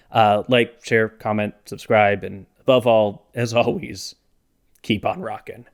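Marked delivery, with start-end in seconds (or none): 4.8-5.5 voice stumbling, catching in throat, quieter. Signing off a video with a catchphrase, voice stumbling. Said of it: "my voice kinda stumbled there".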